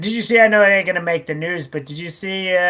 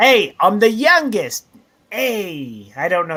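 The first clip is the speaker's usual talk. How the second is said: slow, poor fake Canadian accent, "hey" stretched. Discussing Canadian history with another speaker, a speaker puts on a bad Canadian accent. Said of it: "That's a bad Canadian accent".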